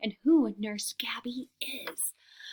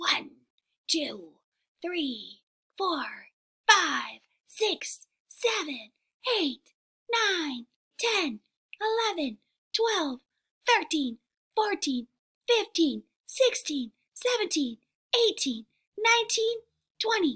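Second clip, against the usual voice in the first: pitched-up little lion cub voice; 6 semitones higher than usual. Teacher counts aloud with the class before a cub story; little lion cub voice. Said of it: "use a cub voice".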